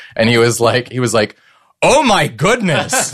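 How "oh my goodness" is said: put-on loud, high, full outdoor-voice outburst. Retelling a moviegoer's outburst in a packed theater: imitating a loud exclamation. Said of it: "full outdoor voice volume".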